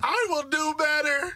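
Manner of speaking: tearful, blubbering crying, very high and slow. Mocking how a woman cried while apologizing amid backlash: mock crying apology. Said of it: "she got on there crying like".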